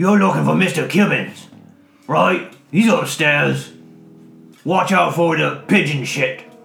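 loud talk through a mouthful while chewing. The narrator voices a man answering the knock, talking with mouth full. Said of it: "with his mouth full of rations".

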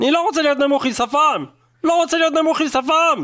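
increasingly worked-up angry voice. Playing a character who starts losing their temper: getting worked up, angry. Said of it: "אני מתחיל להתעצבן!".

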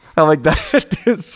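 high, loud, laughing in disbelief.

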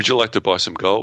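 fake broken English speech. Retelling a gold seller's chat message: imitating bad broken English. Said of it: "it's all really bad broken English".

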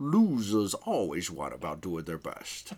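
very low, soft, stretched-out swooping drawl. Show how he drags out the word "losers", in a drawn-out Sean Connery impression. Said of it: "He's like".

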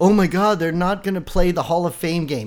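ordinary delivery

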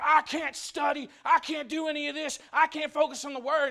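mock fed-up, loud, furious outburst with words dragged out. Retelling someone blowing up while trying to study: imitating an angry outburst. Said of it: "till finally he just blows up".

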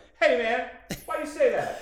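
loud shout. Retelling a roast, quoting someone heard in the background: imitating a loud shout. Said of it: "he said it so loud".

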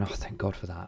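whispered, tearful, relieved joy. Retelling hearing their baby is okay, speaker acts out their reaction: retelling tearful joy. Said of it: "we well up and we're Crying, kind of tears of joy".

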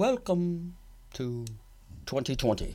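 voice dropped low. Opening a bit with an impression of Barbara Walters introducing a show. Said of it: "the original, like, Barbara Walters, like, intro".

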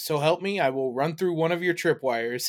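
ordinary talk

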